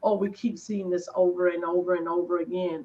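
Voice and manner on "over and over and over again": ordinary talk, nothing marked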